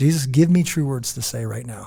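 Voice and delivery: ordinary talk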